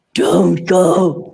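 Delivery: loud, eerie, spine-chilling voice. Retelling leaving an interview with a convicted murderer: chilling voice imitating Marie Moore. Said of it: "And then she did this voice".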